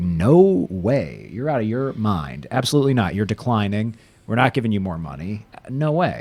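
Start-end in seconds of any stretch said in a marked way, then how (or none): none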